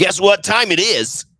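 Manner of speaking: radio DJ voice. Introducing the next bit on the show, in a radio DJ voice. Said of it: "That's my radio DJ voice".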